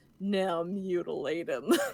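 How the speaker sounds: exaggerated, super evil villain voice. Retelling a scene, quoting Darkwing the Malevolent Ghost in his super evil voice. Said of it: "in like his super evil voice goes".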